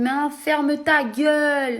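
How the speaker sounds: put-on Marseille accent. Retelling a man from Lille who told him to shut up: fake Marseille accent. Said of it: "il met un accent marseillais".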